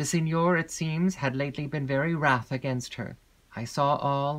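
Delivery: ordinary delivery, nothing marked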